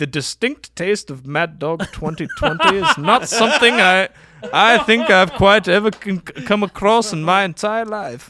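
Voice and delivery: loud, high, proper received pronunciation. Imitating an actor's old liquor commercial: James Mason impression. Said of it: "he's got that very proper voice. He's very received pronunciation".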